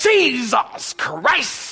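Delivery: mock disdainful curse. Imitating someone who stubbed a toe: imitating someone cursing with disdain. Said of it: "they even say it with that, uh, disdain almost".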